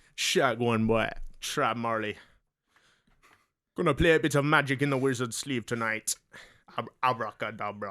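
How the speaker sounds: bad put-on Jamaican accent. Performing their own comedy character for podcast listeners: Throb Marley Jamaican accent.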